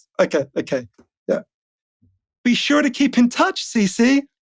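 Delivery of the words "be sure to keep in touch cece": put-on prim, well-spoken, high, slow posh little girl voice. Running a line again as a character meant to be posh: little posh girl voice. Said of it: "she's meant to be like a little posh girl".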